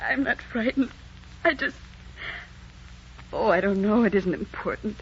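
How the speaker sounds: speaking through tears. Answering a stranger who asks why they are crying: tearful, crying voice. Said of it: "What are you crying about?".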